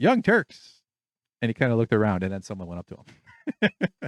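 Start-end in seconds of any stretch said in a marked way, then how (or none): 0.0-0.8 very high, offhand, tossed-out delivery. Retelling a visitor walking in with no one at the door: imitating Sam Harris. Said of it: "He goes".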